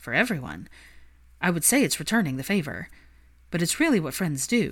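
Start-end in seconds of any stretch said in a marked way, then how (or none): none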